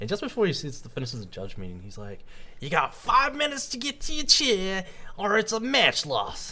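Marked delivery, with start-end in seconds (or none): 2.6-6.5 put-on Southern US accent, very high-pitched. Retelling a judge's warning before a match, in a put-on Southern US accent. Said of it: "I don't know why you're putting on the accent".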